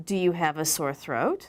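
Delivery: rising intonation, voice going up at the end. English lesson, the doctor's example question, rising intonation at question end. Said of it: "their voice goes up at the end of the question".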